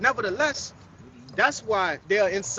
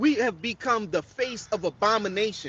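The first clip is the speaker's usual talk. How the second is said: normal talking voice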